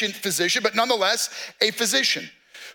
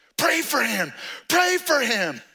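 slow shouting, each word stretched and drawn out; 3 semitones higher than usual. Retelling how neighbors demanded prayer for their fallen father: imitating someone yelling. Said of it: "they're yelling at me".

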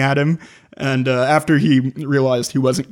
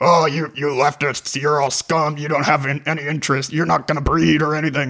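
blustery, ranting delivery. Recounting how a man came over and recorded them, the speaker performs: Alex Jones blustery rant. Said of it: "blustery tone".

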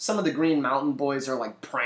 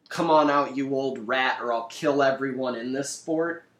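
plain

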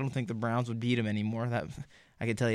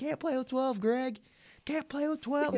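mock, shrill, very high holler. Retelling a man yelling from the sideline, retelling a sideline yell. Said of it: "He's just yelling from the sideline".

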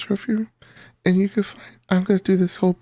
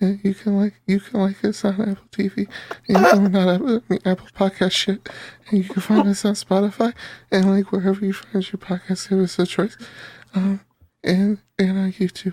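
ordinary talk, nothing marked

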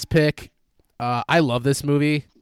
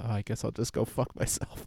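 mimicked mutter, much quieter and lower; 3 semitones lower, 12 dB quieter than usual. Retelling a movie scene, imitating Jonah Hill muttering under his breath. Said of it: "Jonah Hill mutters under his breath".

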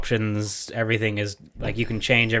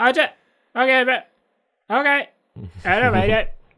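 shrill, very high, broken-up, choppy glitchy audio; 13 semitones higher than usual. Showing how a bad laptop mic would sound to friends: imitating choppy cutting-out mic audio. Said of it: "you just hear me go like".

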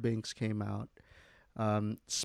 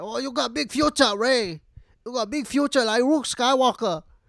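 put-on very high, raised, loud old woman voice; 13 semitones higher, 7 dB louder than usual.

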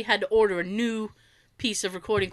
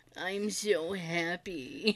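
put-on droopy voice, quieter; 3 semitones lower, 9 dB quieter than usual. Imitating what they can hear: droopy voice. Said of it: "all I can hear is, like, droopy".

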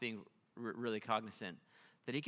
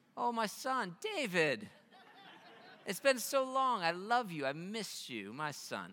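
ridiculous, overblown, swooping, drawn-out, high sing-song; 9 semitones higher than usual. Retelling how the king answers David: ridiculous Saul imitation. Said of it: "it's just so ridiculous".

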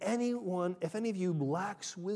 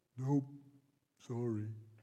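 dumb, goofy, low put-on dopey voice; 6 semitones lower, 4 dB quieter than usual. Acting out an imagined reply to a dispute, in a stupid put-on voice. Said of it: "as stupid as the voice I just put on".

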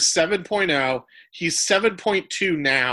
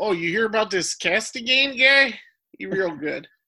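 weird, fake Wisconsin accent; 3 semitones higher than usual. Joking about a player's name, sounding like fishing: put-on Upper Wisconsin accent. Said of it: "like you're fishing in Upper Wisconsin".

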